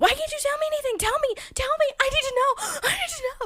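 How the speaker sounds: very high, rushed, frantic, begging freak-out. Retelling how a character freaks out and demands answers: imitating someone freaking out. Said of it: "freaks the fuck out".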